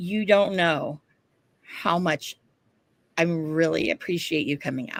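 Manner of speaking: whispering. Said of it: "whispering in my ear".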